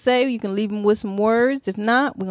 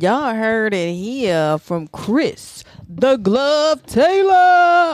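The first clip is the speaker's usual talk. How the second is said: loud, showy put-on radio announcer voice; 5 dB louder than usual. Signing off after a guest's remarks, in an announcer voice. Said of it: "How you like my announcer voice?".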